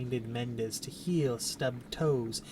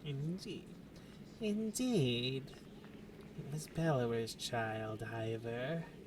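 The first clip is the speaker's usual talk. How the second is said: put-on hushed, creepy old-lady voice; 6 dB quieter than usual. A game character answers Ivor, creepy old lady voice. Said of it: "Time for creepy old lady talk. / Time for creepy old lady talk. [name] finds a quiet moment to make her way over to you, leaning on her staff. / [name] finds a quiet moment to make her way over to you".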